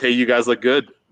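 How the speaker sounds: ordinary delivery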